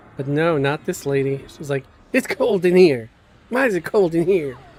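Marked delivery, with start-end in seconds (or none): 2.2-4.6 acted-out, rude, irritated, angry snap. Retelling how a passenger in the car snapped: imitating someone snapping angrily. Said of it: "She sounded angry".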